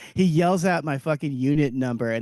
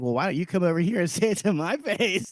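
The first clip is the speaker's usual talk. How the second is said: put-on taunting tone; 3 semitones higher than usual. Recounting taunting a man to get him on camera, retelling his own taunt. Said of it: "So I just kept taunting him".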